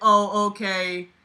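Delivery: completely disinterested, uninterested tone. Reading a story aloud, Ashley answering the narrator: completely disinterested tone. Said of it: "in a tone that seemed completely disinterested".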